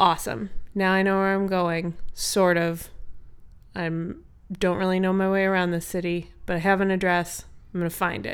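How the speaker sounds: ordinary delivery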